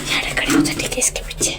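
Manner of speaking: very soft, voiceless whisper.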